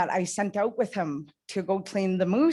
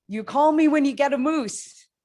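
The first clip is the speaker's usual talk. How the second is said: loud, pitched-up hollered yell; 7 semitones higher, 5 dB louder than usual. Retelling sending someone off on the water: retelling a yell. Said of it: "And I yelled at him".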